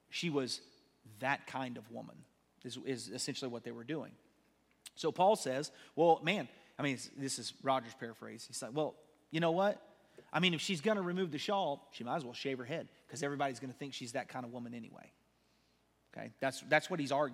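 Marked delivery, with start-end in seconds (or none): none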